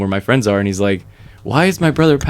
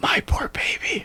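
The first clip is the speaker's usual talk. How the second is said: barely-there, very hushed whisper. Retelling a video of a drunk friend caring for her: imitating a whisper. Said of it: "he whispers".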